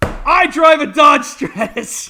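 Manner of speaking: put-on, sudden, comedic out-of-nowhere shout. Recalling a comedy sketch line shouted at random: Will Ferrell random shout. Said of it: "Will Ferrell in that S N L skit where he just randomly shouts".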